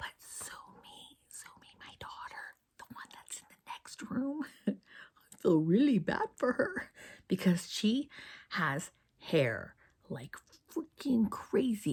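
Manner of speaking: very soft, breathy, barely voiced whisper. A mother whispers about her daughter in the next room: whispering. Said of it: "I'm whispering".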